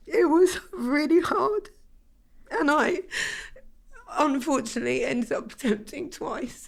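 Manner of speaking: very high voice breaking through tears. Opening up to the other host, tearful and about to cry. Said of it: "I'm gonna cry now".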